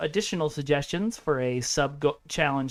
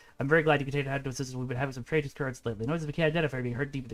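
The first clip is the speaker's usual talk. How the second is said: text rattled off fast at reading speed; 2 semitones lower, 5 dB quieter than usual. Showing how fast your brain reads the text, fast reading pace. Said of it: "that's how fast my brain reads".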